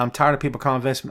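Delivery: ordinary delivery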